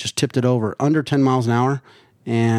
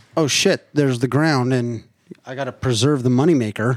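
ordinary talk, nothing marked

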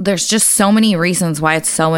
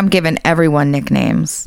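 normal talking voice

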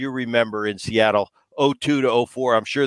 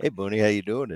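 put-on dry, matter-of-fact, dead straight delivery; 2 semitones lower, 6 dB quieter than usual. Retelling how a teammate greeted him at his locker: imitating Ben, deadpan. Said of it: "I tried to say with a straight face".

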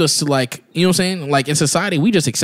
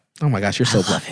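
quieter, imitated woman's voice; 6 semitones lower, 3 dB quieter than usual.

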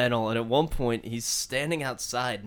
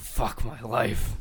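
put-on angry voice. Retelling a man locked out of his house: imitating someone angry. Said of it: "So fucking angry".

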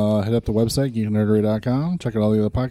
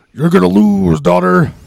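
very loud, rough, raised voice, belted out; 8 semitones higher, 10 dB louder than usual. Retelling a line someone said, in a Hulk Hogan voice. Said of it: "in her best Hulk Hogan voice".

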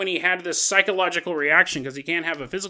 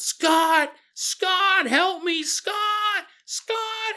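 put-on very high, long, drawn-out screaming; 14 semitones higher than usual. Retelling how a boy screamed to his friend across the room: imitating someone screaming for help. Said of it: "Michael starts screaming out loud".

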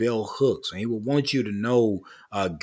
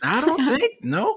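very high-pitched put-on voice, squeaking up an octave. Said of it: "saying in his high-pitched voice".

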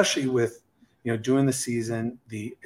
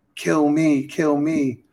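put-on scream, higher and louder; 4 semitones higher, 4 dB louder than usual. Retelling a movie scene where the crew gets shot: imitating a scream. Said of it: "And I'm screaming".

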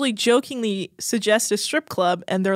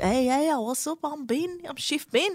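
bad British accent, higher pitch, quieter; 4 semitones higher, 7 dB quieter than usual. Joking with co-hosts about Chef Ben being weird, doing a horrible Chef Ben British impression. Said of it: "That's a horrible British accent".

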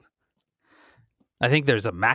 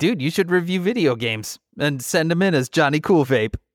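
ordinary talk, nothing marked

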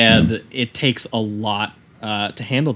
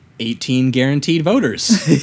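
jaded, calculating, cynical, matter-of-fact tone; 4 semitones higher, 3 dB louder than usual. Retelling a character's remark about an election: imitating a cynical tone. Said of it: "with such a cynical attitude".

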